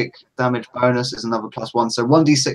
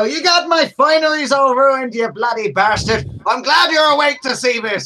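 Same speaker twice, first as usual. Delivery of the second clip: put-on voice, very high, taunting, jeering; 13 semitones higher, 4 dB louder than usual. Playing a character striding up to a troll: in-character taunt at the troll. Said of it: "and I'll go".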